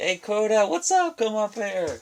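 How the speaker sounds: high, cooing pet-talk voice.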